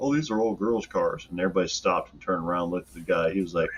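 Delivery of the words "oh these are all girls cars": usual speaking voice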